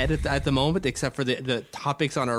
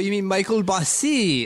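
mock French pronunciation, higher; 6 semitones higher than usual. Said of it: "you had to say it in a French accent".

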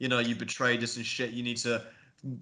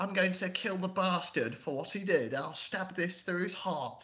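put-on British accent, soft and high; 7 semitones higher, 5 dB quieter than usual. Mocking an actress's line delivery; mock british accent. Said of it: "what the fuck is she doing a British accent for?".

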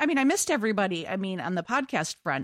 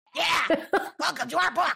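raucous, creaky, loud, high, rough yell; 7 semitones higher than usual. Joining a co-host in doing the audiobook welcome in a voice: loud Helen voice. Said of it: "That was so loud. I'm really sorry".

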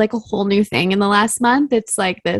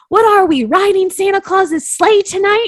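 mock very high, loud hollered yell; 10 semitones higher, 5 dB louder than usual. Retelling a boyfriend's reaction in the bedroom: imitating boyfriend yelling. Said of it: "he yells out".

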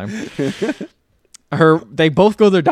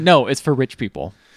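ordinary talk

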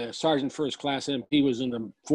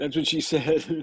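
ordinary talk

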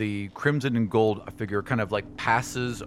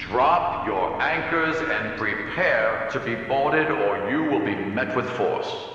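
amplified, echoing voice like a loudspeaker. A beam of light scours the deck as you order the ship boarded, in an echoing, amplified voice. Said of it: "this echoing, amplified voice".

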